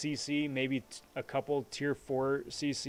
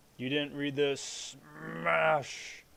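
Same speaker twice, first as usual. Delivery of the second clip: bad put-on monster roar voice. Greeting a viewer in chat, then doing a horrible Hulk impression. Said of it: "That's my horrible Hulk impression".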